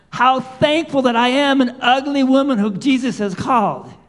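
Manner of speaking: put-on little old lady's voice, shouting out loud. Speaking to a congregation, retelling what a little old lady shouted: imitating an old lady shouting. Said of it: "The little old lady shouted out".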